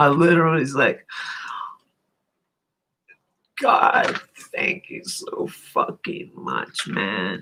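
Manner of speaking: weeping for joy, tearful with happiness. Telling an online audience about a happy moment, crying tears of joy. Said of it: "I am right now".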